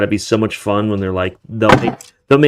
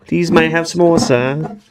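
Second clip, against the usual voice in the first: polite, proper put-on British accent, pitched up; 6 semitones higher than usual. Quoting a line back and forth with friends, in a British accent. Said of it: "You have to have a British accent".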